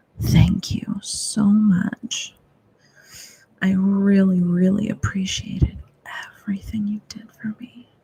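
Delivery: seductive, sultry bedroom voice. Showing listeners how to say thank you to a mantra, in a seductive, sultry bedroom voice. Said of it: "your seductive, sultry bedroom voice and say".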